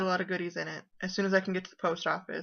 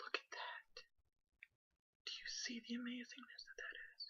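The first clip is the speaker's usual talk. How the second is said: soft, breathy, barely voiced whisper; 5 semitones higher, 22 dB quieter than usual. Showing off knitting supplies she was sent, talking to the listener; whispering. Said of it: "I'm whispering".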